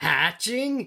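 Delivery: really loud, big-voiced, high shout. Inviting a listener to say the word together: saying it really loud. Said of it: "say it really loud with me".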